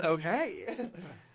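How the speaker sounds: soft, coy "okay" floating up on a giggle. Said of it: "She says".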